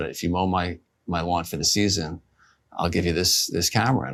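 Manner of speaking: ordinary delivery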